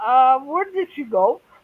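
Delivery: ordinary delivery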